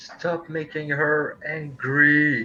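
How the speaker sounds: yelled loudly. Turning toward another character and approaching him, a player is shouting in character. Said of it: "shouting at him like".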